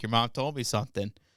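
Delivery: speech broken by laughter. Retelling what dad said at dinner, imitating him laughing while talking. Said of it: "My dad's laughing his ass off".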